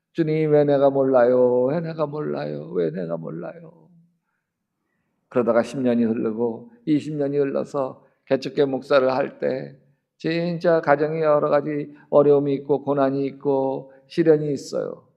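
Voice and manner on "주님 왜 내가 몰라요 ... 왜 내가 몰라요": put-on tearful crying, pleading tone, quieter. Retelling a wife's tearful prayer during a vision: retelling crying while pleading. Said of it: "막 울면서".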